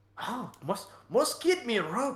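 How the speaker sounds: very high, loud, bad put-on Irish accent. Voicing a stout short man fumbling for his rope: put-on Irish accent. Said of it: "Oh, you were Irish".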